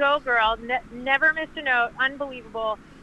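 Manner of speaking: ordinary delivery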